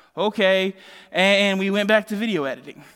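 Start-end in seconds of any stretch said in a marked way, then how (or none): 0.2-0.8 put-on uneasy tone, higher and louder. Retelling the child's reply after a long explanation, imitating an uneasy okay. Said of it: "gave me this uneasy".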